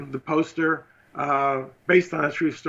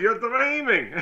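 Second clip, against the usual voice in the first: put-on Israeli-accented voice at a higher pitch; 8 semitones higher than usual. Retelling what the producer said after laughing: impression of Menachem. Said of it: "It's a good impression of him".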